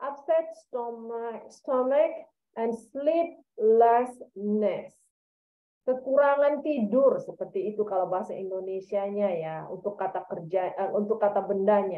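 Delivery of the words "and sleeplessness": "sleeplessness" stressed, said slowly. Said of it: "Because here there is a word".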